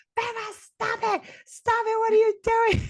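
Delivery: very high-pitched screaming. Recounting a fight while on the phone, quoting the caller screaming: retelling a scream. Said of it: "John Liam is screaming at me saying".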